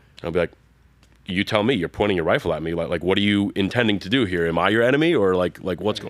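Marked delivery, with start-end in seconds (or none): 1.2-6.1 sarcastic tone, louder. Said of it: "I'm always very sarcastic about it".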